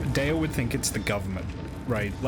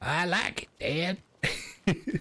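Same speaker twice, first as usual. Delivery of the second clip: bad put-on cartoon boy voice, higher pitched; 6 semitones higher than usual. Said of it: "I can't do a Bobby Hill voice".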